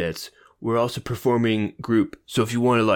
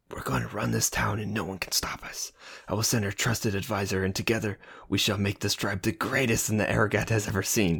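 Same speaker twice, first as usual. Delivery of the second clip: low, hushed, half-whispered drow voice; 7 dB quieter than usual. Voicing Taylor embracing the mayor after the news, in a low drow half-whisper. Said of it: "Taylor whispered in a low, drow voice".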